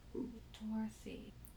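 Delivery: very soft, slow, under-the-breath murmur. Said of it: "keep saying it under my breath".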